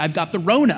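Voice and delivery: ordinary talk, nothing marked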